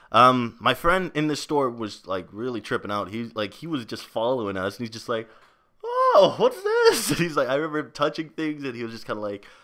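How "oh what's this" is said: loud, exaggerated, very high Canadian accent. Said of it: "really bringing out the accent".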